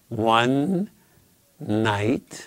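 ONE and NIGHT stressed. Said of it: "think of that as your hint".

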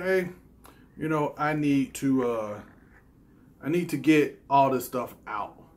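ordinary delivery

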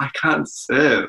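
high, tearful crying voice. Retelling talking to their dad during a first tournament game; imitating own crying voice. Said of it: "I was like in my crying voice".

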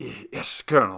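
speaking through chattering teeth. Reading a story, a companion answers the colonel, teeth chattering. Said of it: "his teeth chattering".

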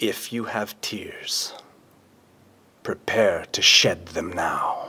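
soft, low, quiet whisper. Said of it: "getting quieter and whispery".

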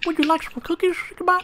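put-on very high-pitched old-timer voice. Trying out a new voice to talk to Sickbot: old head voice. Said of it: "I gotta try to sound like an old head".

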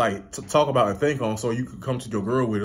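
normal talking voice

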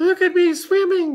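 very high, loud, squeaky little voice. Swept along in the middle of a pool, he calls to the others, squeaking. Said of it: "squeaked Roo".

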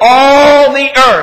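the word all hit hard with stress. Reading a bible verse aloud, stress on all. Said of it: "I put the emphasis on all for a reason".

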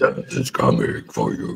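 rough, creaky, low, scratchy monster voice. Showing the monster voice everyone can do: low, scratchy monster voice. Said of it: "The low, scratchy voice".

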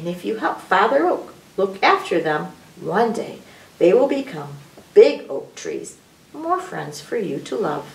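ordinary delivery, nothing marked

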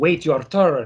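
weird, put-on, Russian-like accent. Recalling a line from GoldenEye: Famke Janssen's weird Russian-esque accent. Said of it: "in that weird Russian-esque accent that Famke Janssen was doing".

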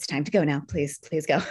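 firm yet kind mother tone. Speaker repeats an earlier bit on request, in a hard but kind mommy voice. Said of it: "Hard but kind mommy voice of like".

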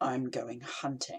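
low, hostile voice, rage held in check. A man, asked what he is going to do, answers low and hostile. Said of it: "The man's voice was low and hostile".

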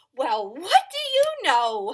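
loud, swooping speech with laughter running through. Told he forgot to sneeze, the elephant answers, laughing. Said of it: "Laughed the elephant".

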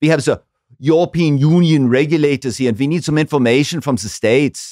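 exaggerated fake German accent, loud and high. Retelling a phone call asking for information: put-on german accent. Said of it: "putting on a German accent".

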